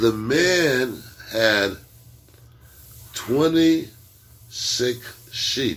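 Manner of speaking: spoken very slowly, drawn out. Saying a sentence for the guys so they catch it, said really slow. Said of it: "I'm gonna say it really slow for you guys".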